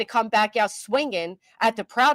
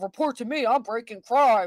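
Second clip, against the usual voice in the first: acted mocking imitation. Telling how they mocked Nick the other day, the speaker does a mocking Nick voice. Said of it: "this is mocking voice".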